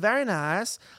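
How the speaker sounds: put-on high-pitched comic Eastern European accent. Reading a message from Jake Dog aloud, in a Borat voice. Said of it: "I'll read his Borat voice one".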